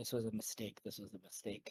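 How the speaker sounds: very quiet, low, hushed muttering. Voicing a character reacting in a tense conversation: muttering under breath. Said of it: "I mutter under my breath".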